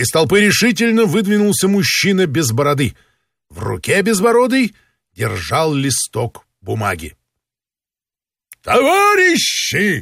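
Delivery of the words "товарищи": shrill, high, cross, angry outcry. A beardless man holding a sheet of paper steps out of the village crowd: angry shout. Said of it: "сердито крикнул он".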